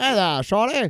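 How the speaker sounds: put-on old-timey Boston policeman voice. Retelling a movie scene, quoting a character: old-timey boston policeman voice. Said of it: "he's an old-timey Boston".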